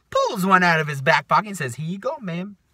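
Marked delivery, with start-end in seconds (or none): 1.8-2.6 put-on snide sarcasm, pitched up. Retelling a supervisor handing over a complaint form: imitating a sarcastic reply. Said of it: "being the sarcastic asshole that he is".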